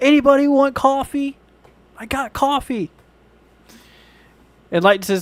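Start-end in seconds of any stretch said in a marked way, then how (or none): 0.0-2.9 put-on shrill, high, loud, drawn-out scream. Describing a man holding up a coffee pot in a store: imitating someone screaming. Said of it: "and he's screaming".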